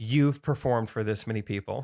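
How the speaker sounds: usual speaking voice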